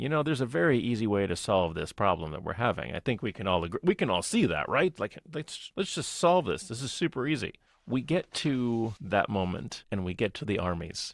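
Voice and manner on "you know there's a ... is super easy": ordinary delivery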